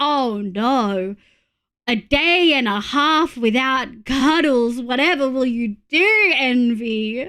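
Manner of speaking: mildly disappointed tone, words very slow and drawn out. Reacting to a viewer away until Sunday: put-on slightly disappointed voice. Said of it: "That was just a slightly disappointed voice".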